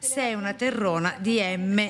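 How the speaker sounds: plain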